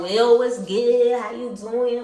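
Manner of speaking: put-on thick Miami accent. Acting out Smiley knocking on Biggie's trailer door, in Smiley's very thick Miami accent. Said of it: "she has a very thick Miami accent".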